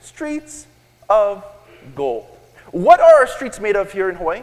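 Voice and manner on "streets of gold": very slow, deliberate, drawn-out delivery. The speaker tells the audience to say the phrase slowly, then says it very slowly. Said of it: "Say that slowly".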